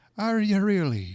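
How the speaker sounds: put-on Irish accent. Retelling a phone call to Jim's house, imitating Peggy's Irish accent. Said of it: "she had this great Irish accent".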